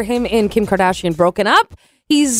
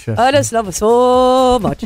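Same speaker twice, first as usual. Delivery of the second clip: silly dog voice, "so" drawn out. Showing the listeners how her dog talks, in a put-on dog voice. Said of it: "That's how her dog talks".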